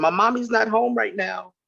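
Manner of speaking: put-on, high small child's little-girl voice. Retelling the wife answering a sales call on the house phone: imitating a little girl's voice. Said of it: "her little girl's voice".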